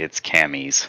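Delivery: put-on whisper. Retelling a line said quietly to someone else: retelling a whisper. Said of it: "I was whispering to Trey".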